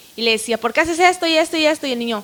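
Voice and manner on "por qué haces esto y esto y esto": loud, raised, pitched-up scolding tone. Retelling scolding the child: imitating own loud scolding. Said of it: "pero con voz fuerte".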